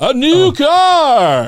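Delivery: very high, swooping announcer voice, "car" drawn out. Announcing your own new car to listeners in your best Bob Barker voice. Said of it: "I'm gonna use my best Bob Barker voice".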